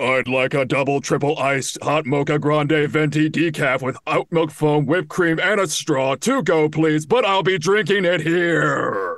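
bigger, excited robotic voice. Doing a second take of the robot line, asked to go bigger: bigger excited robot voice. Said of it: "A little bit bigger".

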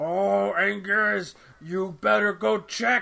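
bad-dub monster voice, high and slow. Retelling a scene from the English version with bad monster voice acting: imitating Godzilla's English dub voice. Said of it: "I remember Godzilla is like".

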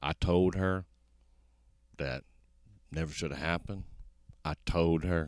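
mock mournful, solemn, soft, halting, broken-up phrasing. Retelling how de Blasio spoke about a killing: imitating de Blasio acting sad. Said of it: "he acts real sad".

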